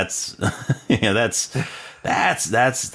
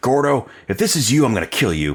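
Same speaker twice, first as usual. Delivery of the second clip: put-on upset voice, pitched higher; 4 semitones higher, 3 dB louder than usual. Retelling a movie scene where John starts getting upset: imitating upset John. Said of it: "then John starts getting upset".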